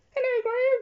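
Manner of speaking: squeaked out, very high-pitched. Telling how Mickey Mouse would wake them after fainting, Mickey Mouse squeaky voice. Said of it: "Mickey Mouse is going to wake me up with his weird squeaky voice".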